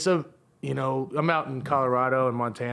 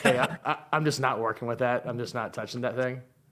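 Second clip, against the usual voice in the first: plain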